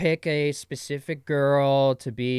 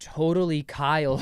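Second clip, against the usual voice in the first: plain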